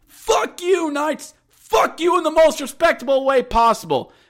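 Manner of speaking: very high, unhinged, rowdy jeering outburst. Retelling a fan shouting after another empty netter: imitating a fan going nuts. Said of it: "he's going nuts".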